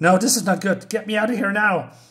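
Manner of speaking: mild put-on panic, a little flustered. Retelling a comic scene where the professor panics: acting out panic. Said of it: "Gromolka is a little bit panicking".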